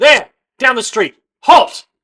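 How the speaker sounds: very high, very loud shout. Narrating to the players, voice a pair of guards shouting after them. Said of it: "A pair of guards shout".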